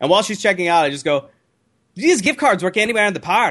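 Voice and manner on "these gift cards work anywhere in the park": put-on Scottish accent, pitched up. Retelling a moment at a checkout, speaker talks in a Scottish accent. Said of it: "with the Scottish accent".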